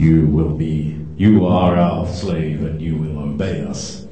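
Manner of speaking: low put-on giant voice. Showing how the giant Anunnaki characters sound, in a giant Anunnaki voice. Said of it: "Let's just see if I can".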